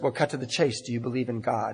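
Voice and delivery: put-on British accent. Retelling a woman on the bus asking him a question, in a beautiful British accent. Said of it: "In this beautiful British accent".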